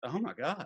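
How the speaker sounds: suddenly sobered, dead-serious, grave exclamation. Retelling a child's reaction to startling news: imitating a kid turning serious. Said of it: "he just got real serious and goes".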